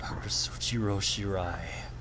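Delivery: soft, hushed whispered name.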